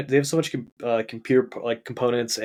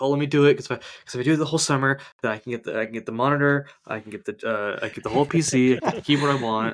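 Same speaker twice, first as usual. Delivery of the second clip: put-on eager, pleading child voice. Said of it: "I was, like, begging my parents".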